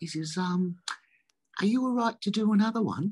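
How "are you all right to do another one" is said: courteous, polite, small, very high-pitched voice. Retelling how someone knelt at the car window: imitating Jesse, polite. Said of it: "he's so polite".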